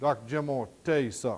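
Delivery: mock serious, grave, upset tone. Retelling a foreman turning to the client: imitating a serious, upset tone. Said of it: "the inflection in his voice that he was serious and that he was upset".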